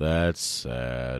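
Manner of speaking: low, sad, drawn-out donkey voice. Doing a bit comparing a character to Eeyore: Eeyore voice. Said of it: "Is that what Eeyore sounds like?".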